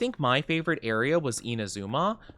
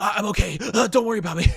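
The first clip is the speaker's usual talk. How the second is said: mock over-the-top heavy panting, higher; 9 semitones higher, 4 dB louder than usual. Retelling how a wounded game character spoke: imitating over-the-top heavy breathing. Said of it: "he was breathing so heavily into the microphone".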